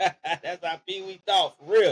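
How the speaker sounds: ordinary delivery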